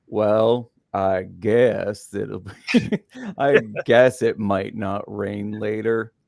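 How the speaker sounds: glum, gloomy, mopey donkey voice, sounding like nothing's worth it. Recalling Pooh characters, the speaker quotes Eeyore: Eeyore impression. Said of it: "and then Eeyore, what was his like?".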